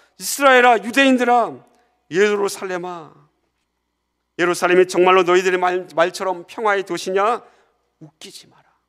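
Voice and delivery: loud, mocking, accusing, sarcastic jeering tone. A preacher acting out how foreigners mocked Jerusalem, in a mock-sarcastic taunt. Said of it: "그런 비난의 말투가 예루솔루마입니다".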